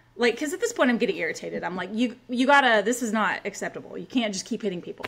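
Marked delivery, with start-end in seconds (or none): none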